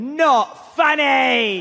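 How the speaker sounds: dry put-on rock-star frontman voice. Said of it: "he went".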